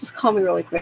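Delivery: ordinary delivery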